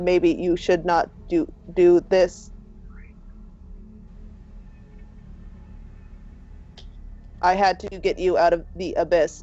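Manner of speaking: very robotic, machine-like android speech. Describing a game scene where a figure stops you, very robotic voice. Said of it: "you hear a very robotic voice going".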